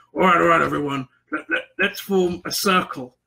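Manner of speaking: dopey, stupid-sounding character voice. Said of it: "played him perfectly in this really stupid manner".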